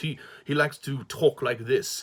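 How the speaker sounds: put-on posh upper-crust English accent. Describing a character's disguise during a theft, Garen's posh English accent. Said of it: "a posh English accent like this".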